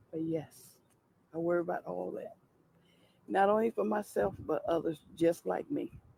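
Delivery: high, lifted voice, fighting back tears. Answering whether bills can be paid if Congress doesn't act, holding back tears. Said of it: "I'm trying not to cry".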